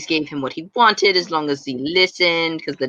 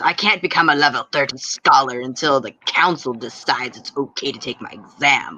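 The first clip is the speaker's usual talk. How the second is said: hostile, pushy, aggressive, forceful delivery; 3 semitones lower than usual. Voicing a character explaining why he can't take his exam: aggressive. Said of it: "He says it very aggressively".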